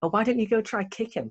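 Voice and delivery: sarcastic, very high-pitched. Retelling a teacher's reply to other students: imitating a sarcastic teacher. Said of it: "the teacher goes sarcastically".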